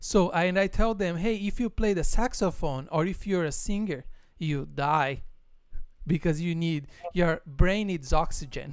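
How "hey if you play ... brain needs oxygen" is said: normal talking voice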